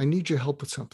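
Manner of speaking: quick, calm, matter-of-fact delivery.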